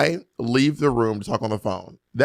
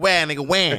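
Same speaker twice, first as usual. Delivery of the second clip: put-on child's voice with a Brooklyn accent; 2 semitones higher than usual. Imagining a little six-year-old talking: child's brooklyn accent. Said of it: "a little six-year-old with a little Brooklyn accent".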